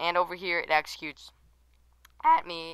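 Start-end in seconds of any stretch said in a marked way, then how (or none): 2.2-2.7 voice breaking and cracking mid-line. Explaining a game mechanic, voice cracking. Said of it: "wow, voice crack".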